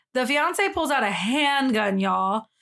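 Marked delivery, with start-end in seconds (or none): none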